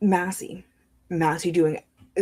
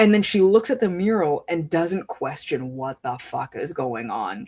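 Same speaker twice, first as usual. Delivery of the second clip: usual speaking voice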